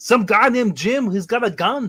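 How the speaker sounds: big showy voice. Answering a question asked of him as Arnold Schwarzenegger: Arnold Schwarzenegger voice. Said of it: "Arnold Schwarzenegger, how about you tell me".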